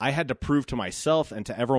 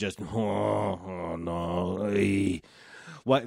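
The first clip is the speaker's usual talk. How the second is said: terrible fake French accent, long drawn-out no; 3 semitones lower than usual. Host recording solo, voicing how they felt, in a terrible French accent. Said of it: "This is a terrible French accent".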